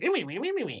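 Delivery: high, squeaky little voice. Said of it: "like, little voice".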